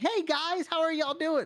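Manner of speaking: very high voice, a whole octave up. Speaker imitates what people do, pitching their voice up an octave. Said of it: "pitch their voice up an octave".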